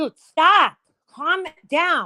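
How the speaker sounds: very slow, drawn-out, loud, high scolding yell. Telling the dog to calm down, screaming at the dog. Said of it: "don't mean to scream in everybody's ears".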